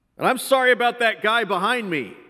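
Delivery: loud, high-pitched voice. At the server's window, the speaker apologizes for the man behind them, said loudly. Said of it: "I said loudly enough for him to hear me".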